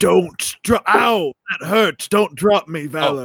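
distorted, warped voice. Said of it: "if I can distort my telepathic voice".

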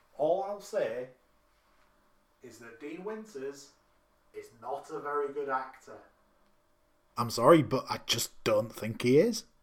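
quiet, hushed, under the breath. Giving an opinion after stepping away from the mic: said quietly. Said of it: "I'm gonna say this quietly".

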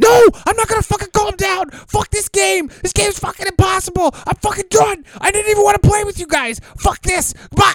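put-on shrill, loud, high-pitched furious raging tantrum. Retelling a game blowup, the speaker acts out the outburst: mock raging meltdown. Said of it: "Can I try this real quick?".

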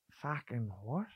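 put-on Australian accent. Retelling a stranger's reaction in a story: put-on Australian accent. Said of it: "even as I'm doing this Australian accent".

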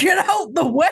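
offhand, tossed-off bro voice. Imagining a jet ski rider interrupting the calm: pretend yelling like a Chad. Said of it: "with some Chad yelling".

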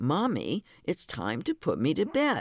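put-on small child's indignant voice, high-pitched and swooping. A mother retells her three-year-old daughter coming into the living room, mimicking a little indignant voice. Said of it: "said in her little indignant voice".

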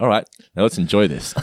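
ordinary delivery

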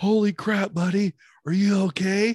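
put-on close-range yell. Recall him yelling in your ear while you were on the ground, imitating someone yelling. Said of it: "him yelling in my ear".

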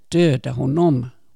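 loud screaming, crowd-like.

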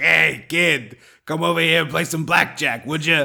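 badly done put-on New York Italian accent. Picturing a casino clam with a cigar, talking in a bad New York Italian accent. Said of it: "doing our bad New York Italian accent".

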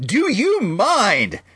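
very high, shrill, super loud, strained voice. Retelling how a stranger in a theater turned around: imitating a loud complaint. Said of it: "super loud".

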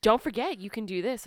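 mock condescending tone in a put-on voice. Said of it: "he's very condescending".

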